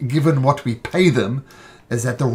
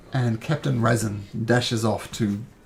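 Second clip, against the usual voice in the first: plain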